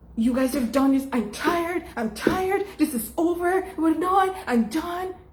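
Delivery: high-pitched, irritated, condescending yelling.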